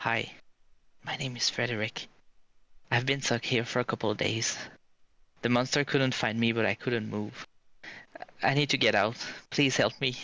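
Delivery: hushed whisper. Voicing a stuck man who whispers to the adventure party, whispering as Frederick. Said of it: "and he whispers to you".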